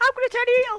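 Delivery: very high-pitched voice. Repeating a promoter's quote in that exact voice: imitating Dixie Carter. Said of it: "in that exact voice".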